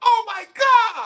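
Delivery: very high-pitched, loud, shrill crybaby squeal. Mocking a player who complains about fouls: mocking high-pitched voice. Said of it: "high pitched voice".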